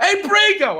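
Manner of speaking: mock very high, loud shout. Reading a story aloud, calling out to brigo: loud call, not a whisper. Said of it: "You whispered like that?".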